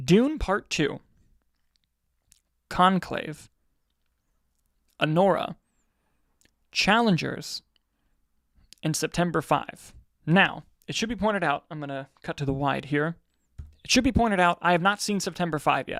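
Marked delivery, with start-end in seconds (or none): 0.0-9.9 slow, measured, deliberate, spaced-out delivery. Listing picks so the other speaker can type them in: saying the list a bit slowly. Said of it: "I'll say them a bit slowly".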